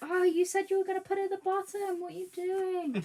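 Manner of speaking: very high, shrill, loud scream. Imagining viewers reacting to a crafting mistake: imitating viewers screaming at screen. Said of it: "people were screaming at the screen".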